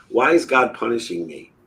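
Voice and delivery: play-acted crying, words choked through tears. Retelling asking the mother a question, imitating own crying voice. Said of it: "and then I was crying".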